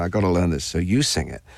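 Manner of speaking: ordinary talk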